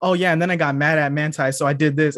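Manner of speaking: ordinary delivery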